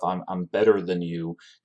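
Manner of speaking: ordinary delivery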